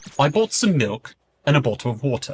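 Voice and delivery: RP British accent, plain reading tone. Giving accent example sentences on an educational channel, RP British accent. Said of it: "RP British".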